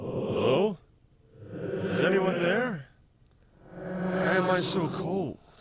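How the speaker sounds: eerie, very high-pitched, haunted ghostly voice. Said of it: "a pretty cool sort of haunted, ghostly sound".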